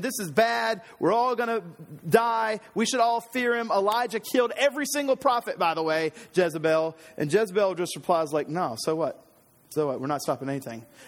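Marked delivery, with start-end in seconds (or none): 0.0-5.6 tense, frightened, strained, panicked high screaming. Speaker retells a man screaming to Jezebel after the altar is consumed; retelling a tense scream. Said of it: "feel the tension in his voice as he's screaming it".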